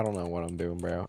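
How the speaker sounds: normal talking voice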